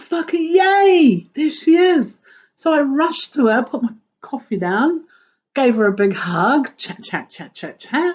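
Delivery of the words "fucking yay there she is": put-on delighted high cheer with long drawn-out yay. Recounting finally spotting the person she'd been looking for, retelling excited delight. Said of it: "was so excited to find her".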